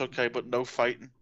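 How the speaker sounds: ordinary delivery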